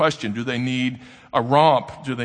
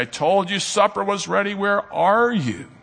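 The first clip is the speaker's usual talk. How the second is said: put-on raised calling voice, pitched up; 7 semitones higher than usual. A dad retells calling his kids to supper, retelling raising his voice. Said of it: "I have to raise my voice occasionally and say".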